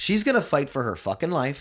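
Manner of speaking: heated, angry, high-pitched, worked-up rant. Speaker mid-rant in a conversation, getting worked up. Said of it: "I'm getting worked up now".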